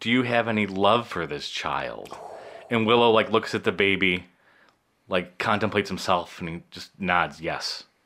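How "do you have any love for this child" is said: private, hushed stage whisper. Retelling a movie scene where the wizard asks Willow: half-whispering. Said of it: "then he whispers to Willow".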